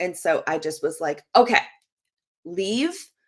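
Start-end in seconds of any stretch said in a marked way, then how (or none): 1.3-2.9 curt, abrupt, dismissive tone, pitched up. Retelling telling a son who came in to leave: imitating own abrupt tone. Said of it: "the way I said it was very abrupt".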